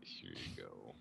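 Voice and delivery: barely audible, very soft, quiet whisper. Handing a hand back to Milo in character: whispering to Milo. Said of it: "I'll whisper to Milo".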